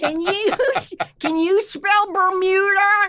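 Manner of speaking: put-on drunk teacher voice. Doing a kindergarten teacher character who goes to class drunk: put-on drunk kindergarten teacher voice. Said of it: "kindergarten teacher three days before retirement that went to class drunk".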